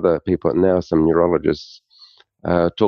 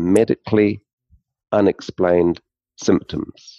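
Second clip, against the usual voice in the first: slow, deliberate, each word laid out carefully. Speaker naming a conference's main topic to a listener, said slowly. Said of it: "I'll say this slowly".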